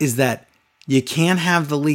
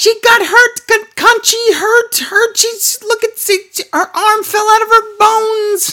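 put-on very high, loud, slow little kid shriek; 6 dB louder than usual. Mocking a commentator's sudden outburst: imitating Beth Phoenix's weird kid voice. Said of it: "This weird little kid voice just screams out".

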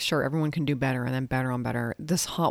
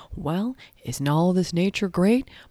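put-on nature documentary narrator voice, higher and louder; 5 semitones higher, 4 dB louder than usual. Mocking the wrap-up at the end of a nature documentary: imitating David Attenborough. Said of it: "when he's just like".

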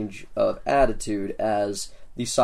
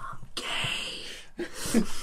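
soft, very quiet whisper; 12 semitones higher, 8 dB quieter than usual. Voicing a character who bear hugs a player: whispering real quietly. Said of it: "he whispers real quietly".

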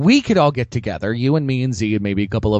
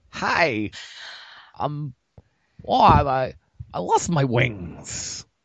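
very slow, drawn-out delivery, every word dragged; 3 semitones higher, 5 dB quieter than usual. Quoting a movie devil, doing a Christopher Walken impression. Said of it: "You also lost your Christopher Walken impression".

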